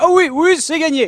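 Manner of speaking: bad, very high-pitched, slowly drawn-out voice. Showing the impression done while streaming: Julien Lepers impression. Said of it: "mon imitation de Julien Lepers, c'est la pire du monde".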